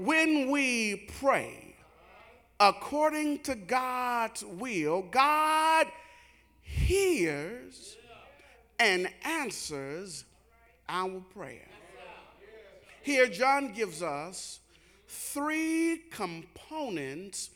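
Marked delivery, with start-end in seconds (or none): 0.0-11.7 slow, deliberate, halting phrasing, broken up, words drawn out. A preacher repeats the key sentence of his text to listeners, said slow. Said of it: "Can I say that slow".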